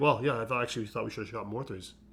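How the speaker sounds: mock sarcastic tone. Describing how a certain player talks, mimic his remark: mimicking a sarcastic remark. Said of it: "He'll be like sarcastic".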